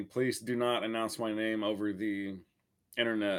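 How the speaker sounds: usual speaking voice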